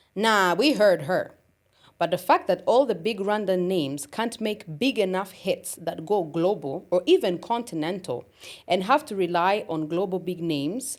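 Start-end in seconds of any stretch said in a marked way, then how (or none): none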